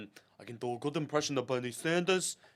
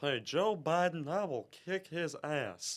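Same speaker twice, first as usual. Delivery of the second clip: put-on, pitched-up cartoon character voice; 6 semitones higher than usual. A speaker slips into a Hank Hill impression mid-conversation: Hank Hill voice. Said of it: "Hank Hill, just Hank".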